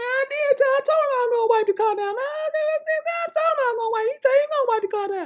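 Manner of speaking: thin, feeble high voice, stretched "I". Mocking how another man talks, imitating how someone sounds. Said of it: "that's how you sound".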